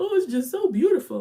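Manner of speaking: very high, loud, weepy crying, tearful gush. Imagining crying at a baby shower and covering it up; acting out crying. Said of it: "And I'll just be like".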